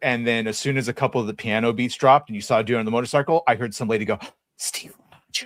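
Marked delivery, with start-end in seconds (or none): 4.6-5.5 imitated whisper, much quieter. Retelling a woman reacting to a trailer in a movie theater, hushed whisper. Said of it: "in a fucking hushed, whispered tone".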